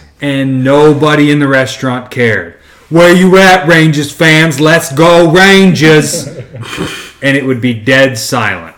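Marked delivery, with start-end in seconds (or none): 2.9-6.3 loud, thick, exaggerated New York accent. Retelling a restaurant dj hyping the crowd before the game, thick new york accent. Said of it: "in the most New York accent he could say".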